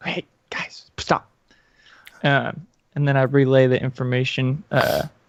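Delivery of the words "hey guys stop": hushed voice, higher and quieter. Warning the party to stop after spotting a kobold: quiet voice. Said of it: "I'd quietly be like".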